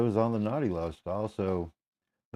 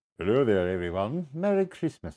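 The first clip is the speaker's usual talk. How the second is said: put-on British accent. Voicing a toy figure greeting everyone: British accent. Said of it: "he has to have a British accent".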